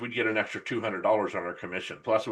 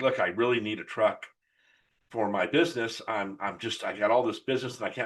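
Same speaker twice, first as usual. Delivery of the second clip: flustered, anxious, frantic stammering with a pleading tone. Retelling a customer who needed a truck for his business: imitating a nervous, frantic customer. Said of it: "kind of a little frantic".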